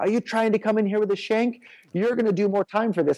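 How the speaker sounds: acted screaming voice. Retelling how a guard accused him of carrying a shank: imitating a guard screaming. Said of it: "he starts screaming at me about how".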